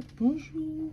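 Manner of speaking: put-on tiny, very high baby voice.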